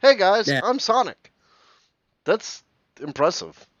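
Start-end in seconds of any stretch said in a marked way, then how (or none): 0.0-1.3 very high-pitched, very loud delivery. Contrasting a voice actor's roles, now the hedgehog: Sonic voice. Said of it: "voice Sonic?".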